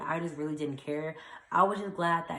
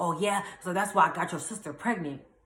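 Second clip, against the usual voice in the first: put-on, increasingly angry tone. Retelling a phone call where the caller's tone changed: imitating Harry's mad tone. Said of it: "he got mad 'cause his tone changed".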